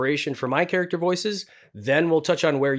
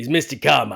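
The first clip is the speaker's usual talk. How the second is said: very deep, loud character voice; 5 dB louder than usual. Showing a character voice from their show, deep Mister Carmichael voice. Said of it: "I drop it down as low as I can".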